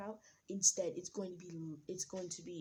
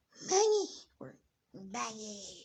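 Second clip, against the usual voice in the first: put-on pirate queen voice, higher and louder; 4 semitones higher, 8 dB louder than usual. Voicing a character shouting a pirate's name: Big Mom voice. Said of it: "how does Big Mom's voice sound?".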